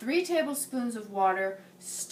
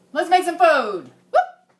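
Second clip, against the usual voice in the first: very loud, projecting, pitched-up talk; 6 semitones higher, 11 dB louder than usual. Starting a cooking video, talking loud so viewers hear every word: loud, projected voice. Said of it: "making it loud".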